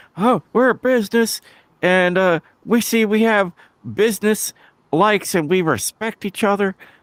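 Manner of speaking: very high-pitched wrestling promo voice. Retelling a wrestling segment, doing an Arn Anderson impression. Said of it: "that's my Arn Anderson".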